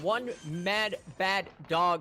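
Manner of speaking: slow, careful, deliberate reading.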